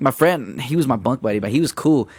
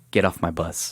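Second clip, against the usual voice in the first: soft, hushed, barely audible drill sergeant whisper; 8 semitones lower, 6 dB quieter than usual. Retelling what a drill sergeant said on the bus, in a quiet whisper. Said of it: "he whispers quietly".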